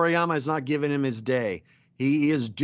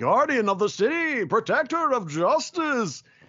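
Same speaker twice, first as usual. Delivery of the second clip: hammy, grand, pitched-up heroic proclamation voice; 9 semitones higher than usual. Recalling fun voicing a fake superhero: hammy Great Saiyaman voice. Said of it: "getting to just ham it up like".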